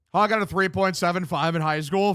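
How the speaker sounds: normal talking voice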